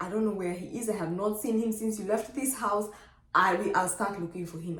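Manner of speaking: ordinary delivery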